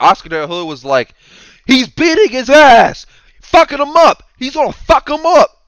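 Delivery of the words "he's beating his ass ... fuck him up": shrill, very high screaming, announcer-like voice. Recounting a fight broadcast, acting out the commentator as Oscar De La Hoya screaming commentary. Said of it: "why are you screaming?".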